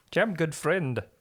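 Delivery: put-on heavy, thick Swedish accent. Introducing a character to the group in a heavy Swedish accent. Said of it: "your accent is just progressively getting heavier".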